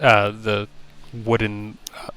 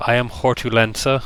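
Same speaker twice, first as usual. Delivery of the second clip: put-on voice of a speaking tree; 2 semitones higher than usual. Voicing a tree that introduces itself by name: speaking as a tree character. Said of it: "and the tree speaks up".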